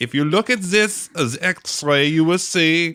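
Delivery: awful, high, fake German doctor accent. Retelling a scene from a film, imitating a terrible german accent. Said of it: "using this really terrible German accent".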